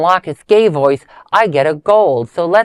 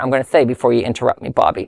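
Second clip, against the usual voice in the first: ordinary delivery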